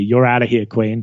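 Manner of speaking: normal talking voice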